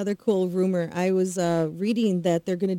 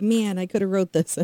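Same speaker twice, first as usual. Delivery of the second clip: usual speaking voice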